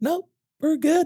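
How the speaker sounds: really high, squeaky-sounding voice. Speaker imitating how people answer in quarterly reviews, in a high-pitched voice. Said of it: "That's a really high pitched voice".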